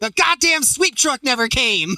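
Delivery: put-on very high-pitched, furious, angry yell. Retelling how a tired runner reacted at the finish line: imitating a shout. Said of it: "that's when Tom shouts".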